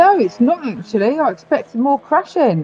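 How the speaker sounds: speaking with mouth full. Answering a question while eating snacks, talking with mouth full. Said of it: "are you eating?".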